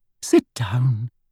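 smooth, silky voice. Reading a hearing scene aloud, voicing Umbridge, in Umbridge's soft, silky voice. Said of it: "said Umbridge in her soft, silky voice".

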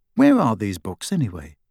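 ordinary delivery

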